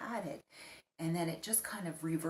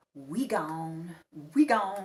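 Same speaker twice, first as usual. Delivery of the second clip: very loud, straining, not-quite American put-on accent; 10 dB louder than usual. Retelling a man with a strong accent trying to sound American: failed American accent attempt. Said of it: "he was trying to speak in an American accent".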